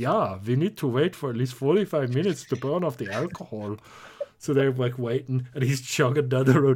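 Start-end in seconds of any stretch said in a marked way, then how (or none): 0.4-3.8 put-on German-accented biker voice. Retelling a made-up encounter with German Hell's Angels: imitating German Hell's Angels. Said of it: "they're just like".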